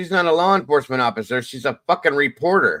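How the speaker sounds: fed-up, annoyed outburst. Critiquing a reporter's interview technique, irritated. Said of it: "I'm getting irritated with this".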